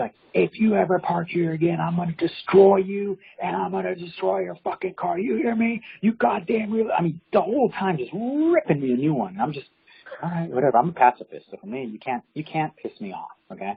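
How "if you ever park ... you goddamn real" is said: high, furious, raging screaming. Telling a story, the speaker acts out a man yelling about parking: imitating a man screaming. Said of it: "he's still screaming and yelling".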